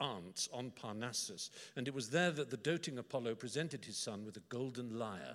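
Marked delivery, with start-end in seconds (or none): none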